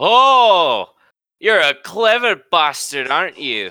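seeing-red rage, very high, shrill and drawn out. Narrating the game, voicing Harlan reacting to your sword strike: furious Harlan voice. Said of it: "He's very upset. Okay. He is seeing red".

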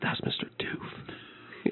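hushed, very quiet whisper. Voicing a character who tells another person something about a customer: whispering. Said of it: "you hear him whisper to one of the other people".

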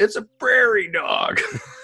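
high-pitched yell. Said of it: "and she just yelled".

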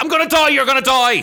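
mock freaked-out, shrill, loud shrieking panicked scream. Describing a car veering slightly, acting out their past self: retelling a freaked-out scream. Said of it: "And I'm screaming and I'm freaked".

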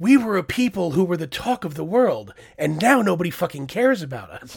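loud scream. Retelling a reaction while watching a show: imitating own scream at the TV. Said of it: "I screamed out loud at my T V".

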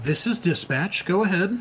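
high female AI dispatcher voice. Voicing the dispatch ai as it answers a call, in a female ai voice. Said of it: "So you hear the female voice".

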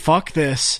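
ordinary talk, nothing marked

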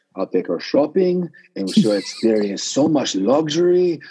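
put-on Spanish accent. Retelling a recent acting job, doing a Spanish accent. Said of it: "speak in a, a Spanish accent".

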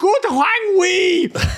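very high, thrilled, faintly eerie shout. Narrating Jürgen shouting to the squad from the sideline: Jürgen's mock-excited, eerie shout. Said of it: "with a very excited and slightly eerie tone".

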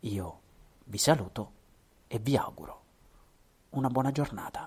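low hushed voice. Signing off to listeners at the end of the talk, low voice. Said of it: "a voce bassa".

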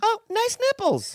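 put-on voice in very high register. Asked to try the line again higher, the speaker says it in a higher register. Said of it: "Try it higher".

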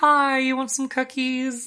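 very high, sweet, friendly voice. Picturing a smiling Bellatrix walking into a room: smiling, nice Bellatrix voice. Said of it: "a smiling Bellatrix walking into the room".

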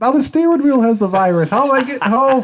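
very high-pitched, frantic, freaked-out panic. Retelling a video of someone in a car: imitating someone freaking out. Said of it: "he's just freaking out".

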